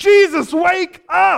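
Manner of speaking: very high, shrill, furious yell. Speaker imagines someone grabbing a sleeping man by the shoulders: mock-angry wake-up shout. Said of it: "they angrily wake him".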